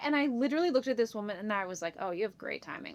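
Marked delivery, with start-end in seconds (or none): 2.0-2.9 whispered, muttered under-the-breath delivery. Retelling a remark to a woman asking for a picture: muttering under breath. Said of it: "under my breath".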